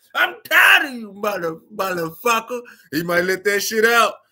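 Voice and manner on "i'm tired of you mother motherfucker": play-acted, thin-edged shrill yelp, mildly raised. Imitating an old coworker fed up with jokes: loud shrill yell. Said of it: "that loud shrill".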